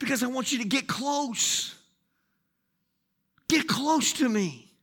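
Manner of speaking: hushed, intimate, close whisper. A speaker addresses the audience, asking them to get close, whispering. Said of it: "So that's why I'm whispering".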